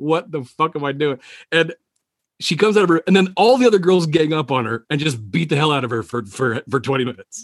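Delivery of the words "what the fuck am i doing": ordinary talk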